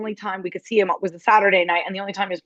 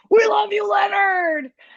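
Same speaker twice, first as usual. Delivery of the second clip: very high-pitched, shouted call-out; 13 semitones higher than usual. Recounting a concert lull when someone in the crowd called out: retelling a crowd member's shout. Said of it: "someone shouts".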